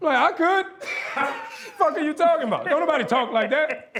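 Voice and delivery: very high scoff with laughter through it.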